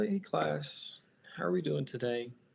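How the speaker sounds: sad, downcast, soft, flat, low-energy voice. Demonstrating how a teacher should not greet the class, sad, low energy. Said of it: "you wouldn't want to be like sad".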